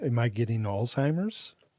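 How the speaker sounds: ordinary delivery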